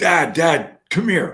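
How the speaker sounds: put-on high, loud, drawn-out yell. Retelling how the son called for his dad: imitating son yelling. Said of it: "he yells".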